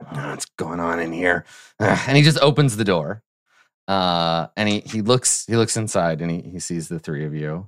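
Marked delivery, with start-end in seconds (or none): 0.0-1.4 grumbling, faster. Narrating a game, voicing the manager outside before he opens the door, grumbling. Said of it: "you hear him grumble".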